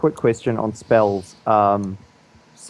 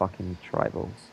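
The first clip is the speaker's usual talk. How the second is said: hushed, barely audible, whispered mutter; 4 semitones lower, 11 dB quieter than usual. A player voices their character's aside, muttered under breath. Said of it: "mutter under my breath".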